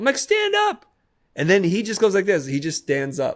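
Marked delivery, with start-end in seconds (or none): 0.2-0.9 very high yelled voice. Retelling telling a son to stand up in the water: imitating a yell. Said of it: "I yelled at him".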